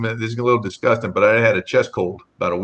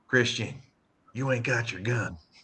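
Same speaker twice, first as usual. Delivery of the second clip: put-on very quiet, hushed voice with a thick Southern accent; 11 dB quieter than usual. Retelling what Tiny said to him, imitating Tiny's Southern accent. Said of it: "Tiny's got this real strong Southern accent".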